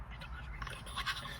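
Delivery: soft whispering. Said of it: "I whisper to a friend".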